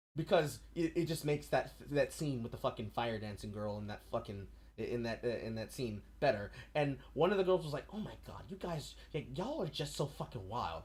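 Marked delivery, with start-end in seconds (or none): 8.0-10.8 soft, mocking put-on voice.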